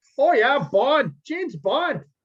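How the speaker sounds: loud, high Wisconsin accent. Joking with a co-host about a Midwestern spy, as James Bond in a Wisconsin accent. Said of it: "do I'm James Bond in Wisconsin".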